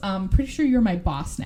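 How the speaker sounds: plain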